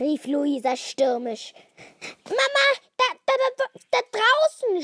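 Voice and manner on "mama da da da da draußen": very high, loud stammer, tripping over words. Reading a children's story, Luisa runs in to her mother; stammering. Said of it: "stotterte Luisa".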